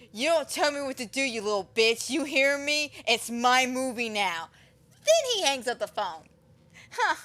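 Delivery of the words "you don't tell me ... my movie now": mock hostile, really aggressive, bullying outburst. Retelling a masked killer's threat over the phone: imitating someone getting aggressive. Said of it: "He gets really aggressive".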